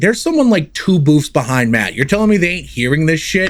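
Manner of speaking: usual speaking voice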